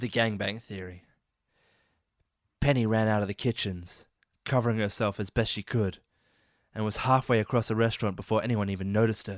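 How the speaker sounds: low, sultry, seductive voice. Reading aloud from a story titled the gangbang theory, mock sexy erotica voice. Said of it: "let me get into my sexy erotica voice".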